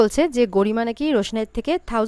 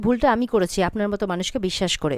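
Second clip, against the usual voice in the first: plain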